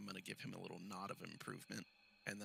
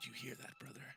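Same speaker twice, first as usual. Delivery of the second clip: quiet, much quieter voice; 4 semitones higher, 5 dB quieter than usual. A player voices their character asking a drow by the door, in a quiet voice. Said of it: "ask him quietly".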